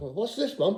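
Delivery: put-on high, curious young child's voice.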